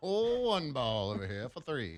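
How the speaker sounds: slow, vintage thirties radio announcer voice. Joking about a player's nickname: 1930s announcer voice. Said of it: "I went to that nineteen thirties announcer again".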